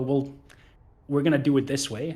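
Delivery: ordinary talk, nothing marked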